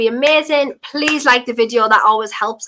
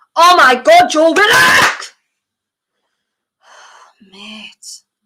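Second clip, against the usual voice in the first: loud, high, exasperated frustrated shout; 6 semitones higher, 5 dB louder than usual. Watching a match live and reacting to a player's play: shouting. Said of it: "Sorry for shouting again".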